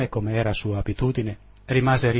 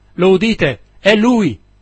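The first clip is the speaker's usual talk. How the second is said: strangled, choked, very loud, high scream; 9 semitones higher, 10 dB louder than usual. Falling from a barrel at a cry over the sea, screaming in a choked voice. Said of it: "urlando con voce strozzata".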